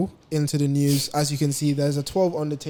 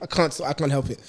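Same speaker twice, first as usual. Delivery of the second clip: ordinary talk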